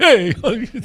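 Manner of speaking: put-on New York accent. Trying a quick impression while joking about accents: Andrew Dice Clay impression. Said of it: "Tried to do Andrew Dice Clay".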